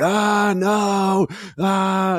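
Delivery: very high, shrill screaming cry. Retelling a movie scene of a man down a hallway: imitating someone screaming.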